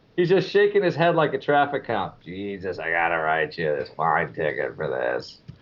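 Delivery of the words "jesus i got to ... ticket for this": deep, very low, soft, husky voice. Recalling a man fining him over a broken phone, imitating his husky voice. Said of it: "he had this really husky voice".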